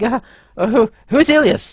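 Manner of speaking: eager voice. Narrating a scene, the speaker voices a man eager to get out of there; eager. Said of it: "He's like very eager to whatever get".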